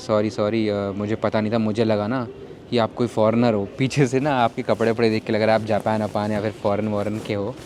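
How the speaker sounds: ordinary talk, nothing marked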